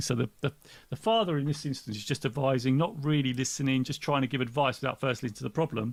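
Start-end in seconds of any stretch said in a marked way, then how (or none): none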